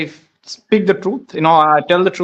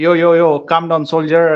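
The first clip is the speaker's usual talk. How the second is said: usual speaking voice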